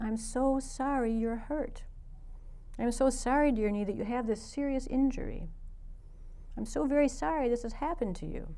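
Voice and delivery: soft, gentle, tender, open-hearted, kind voice. Retelling what they said to their own swollen knee, retelling a kind, open-hearted voice. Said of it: "I said as kindly and as open-heartedly as I could".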